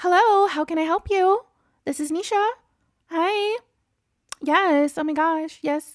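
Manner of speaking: very high, put-on telephone voice. Showing the voice they use answering the phone, higher-pitched phone voice. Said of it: "it's a little bit higher pitched, I guess, the tone".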